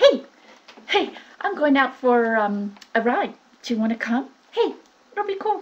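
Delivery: upbeat, casual, fun tone. Demonstrating to listeners how to sound more fun, fun voice. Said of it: "Let's say I want to be more fun".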